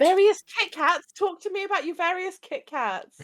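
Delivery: sincere enthusiasm sounding sarcastic. Asking another speaker about their snacks: excited but sounding sarcastic. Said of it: "I don't know if that's fake excitement".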